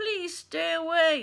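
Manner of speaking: loud high robotic voice. Reading a story aloud, voicing the robot Roz as bears attack, robot voice. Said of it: "I'm not very good at this robot voice today".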